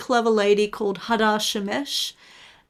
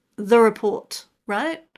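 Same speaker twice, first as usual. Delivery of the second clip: ordinary talk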